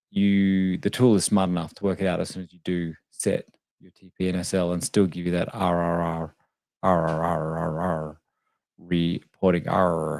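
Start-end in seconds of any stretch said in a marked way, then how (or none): 5.5-10.2 very slow, low, drawn-out rolling pirate arr. Saying the letter R over and over in a trading tutorial, sounding like a pirate. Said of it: "Sounds like a pirate".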